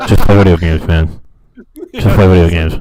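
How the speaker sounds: very loud, deep shout, close to the mic. Told to get close to the mic for a bit, talking as loud as possible. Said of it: "talk as loud as you can".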